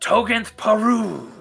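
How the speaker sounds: high, ringing shouted cry. Voicing a ritual call to a gathered group: shouted call. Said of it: "is shouted".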